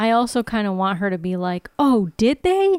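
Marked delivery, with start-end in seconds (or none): 1.8-2.8 high, loud, slow, sarcastic tone. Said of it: "Real sarcasm".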